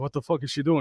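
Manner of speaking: ordinary talk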